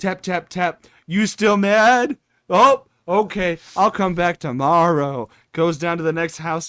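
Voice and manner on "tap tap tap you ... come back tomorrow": raised voice, calling out. Acting out a knocker-upper waking clients: acting out a knocker-upper. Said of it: "Going over to the neighbor's house".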